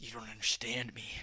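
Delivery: moody, gloomy, low and dark brooding voice. Acting out a character who clashes with a cheerful party: imitating a dark brooding character. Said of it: "the dark, brooding character".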